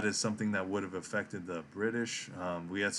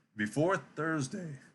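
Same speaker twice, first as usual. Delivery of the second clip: voice cracking mid-phrase, pitched up; 8 semitones higher than usual. Presenting a market outlook for the week, the speaker's voice cracking. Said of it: "there it is again".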